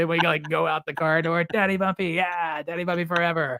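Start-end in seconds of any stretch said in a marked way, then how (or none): 1.4-3.6 big, lively, super animated put-on cheering energy. A father retells how he coaxes his young son out of the house, imitating own super animated voice. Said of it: "I have to be like super animated".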